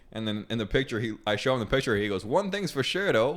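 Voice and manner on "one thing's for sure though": put-on accent of the Bahamas. Retelling a coworker's reply to a photo: imitating a coworker's Bahamian voice. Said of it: "Bahamian as fuck".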